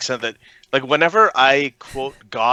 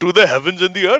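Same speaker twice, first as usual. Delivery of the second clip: high, weird put-on Pakistani Indian accent; 6 semitones higher, 4 dB louder than usual. Speakers joking about imagining how God sounds, weird Pakistani Indian accent. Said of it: "really really weird uh, Pakistani Indian accent".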